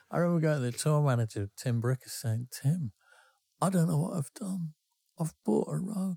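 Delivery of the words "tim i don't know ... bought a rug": high, tearful, upset crying voice. Retelling going to the tour manager after buying a rug: retelling own crying. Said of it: "I was actually crying".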